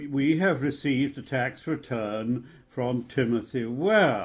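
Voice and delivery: plain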